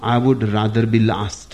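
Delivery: ordinary delivery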